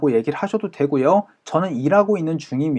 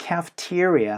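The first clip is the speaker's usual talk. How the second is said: cafeteria with the te syllable stressed; 6 dB quieter than usual. English pronunciation lesson on the word cafeteria: stress on te in cafeteria. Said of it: "te에 강세 찍어서".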